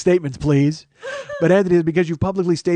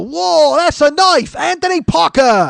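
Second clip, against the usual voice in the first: loud, high, bad, unplaceable fake Australian accent; 11 semitones higher, 5 dB louder than usual. Speaker asks whether he mocked a donor from Australia, in a bad Australian accent. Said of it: "That might not even be Australian. I don't know what that voice was".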